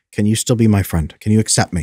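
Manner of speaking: ordinary talk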